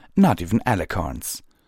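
ordinary delivery

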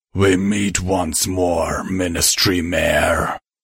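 rumbling up from deep down. Narrator reading the cult leader confronting the Ministry Mayor, in a rumbling Minotaur voice. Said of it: "the Minotaur rumbled".

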